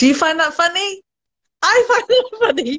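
high, chuckling, laughing, amused delivery. Telling listeners an anecdote about students, laughing at own joke. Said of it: "I'm laughing at my own jokes".

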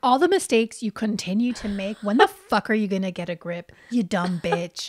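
mock exasperated tone, put-on exasperation. Retelling what a mother's tone meant toward her daughter: imitating an exasperated mom. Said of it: "her mom is so exasperated".

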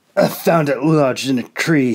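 hoarse, raspy, rasping voice. Narrating a story, a prisoner answers his captor's question about the sword, rasping. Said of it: "he rasped".

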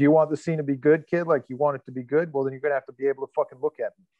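fast, aggressive, gruff delivery. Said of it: "very aggressive and very gruff".

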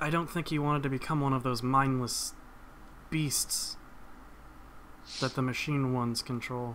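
very hushed, quiet tones. Voicing the weeping woman answering a question about her brother, in very hushed tones. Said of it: "in very hushed tones".

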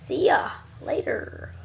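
put-on cowboy accent. Signing off a video to viewers, cowboy accent. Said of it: "Cowboy accent, I guess".

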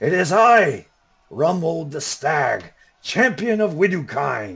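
loud shout. Voicing an enemy champion who challenges a knight in battle: shouting enemy champion. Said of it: "you hear somebody kind of shout out".

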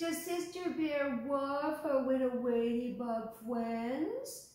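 mocking, high, silly babyish talk. A gang leader mocks a girl watching a ladybug, in silly baby-talk voice. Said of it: "he said in silly baby talk voice".

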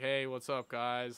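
super monotone, dead-level, lifeless. Retelling first practicing a greeting to the camera, super monotone. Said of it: "Like super monotone and everything".

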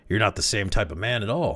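usual speaking voice

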